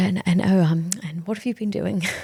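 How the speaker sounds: put-on, proper English accent, fatherly voice. Retelling a father's call about a credit card bill: imitating an English father. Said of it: "And he's really English".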